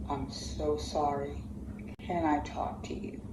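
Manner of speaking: ordinary talk, nothing marked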